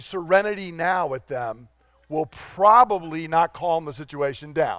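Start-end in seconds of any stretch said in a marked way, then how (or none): none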